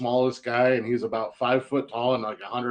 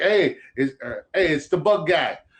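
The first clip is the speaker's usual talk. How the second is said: bad, slow, put-on New Jersey accent; 4 semitones higher than usual. Speaker retells knocking on hotel doors as the bug guy, bad New Jersey accent. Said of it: "shitty New Jersey accent".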